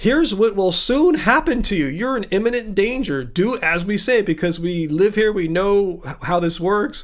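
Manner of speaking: usual speaking voice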